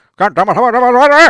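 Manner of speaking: revving, very loud, very high climbing yell. Showing how dad's voice revved up when raised: imitating dad's rising yell. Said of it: "when he raised his voice".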